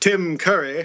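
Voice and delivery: mock British accent and pronunciation. Praising an actor while discussing a movie, saying his name in a British accent. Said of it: "you have to say it with a British accent and say".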